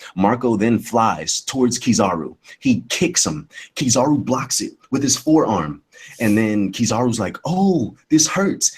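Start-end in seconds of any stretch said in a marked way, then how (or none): 7.5-8.8 unbothered, sarcastic pretend hurt, pitched up. Retelling an anime fight scene, retelling Kizaru's sarcastic line. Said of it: "He said it in a sarcastic manner".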